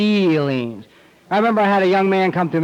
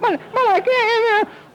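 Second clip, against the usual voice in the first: mock very high, slow, teary crying-child voice. Acting out a hurt three-year-old running to Daddy: imitating a crying child. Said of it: "Stop your crying".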